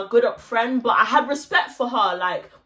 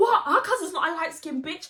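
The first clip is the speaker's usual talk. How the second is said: acted high, mild half-shout; 6 semitones higher, 4 dB quieter than usual. Retelling what a friend shouted in an argument: imitating a friend shouting. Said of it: "She's shouting like".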